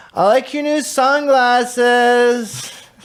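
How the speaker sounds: very high, slow, strung-out junkie drawl. Quoting a man's line while he fiddles with a coffee filter, junky voice. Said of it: "He says in his junky voice".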